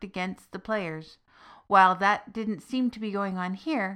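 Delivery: ordinary delivery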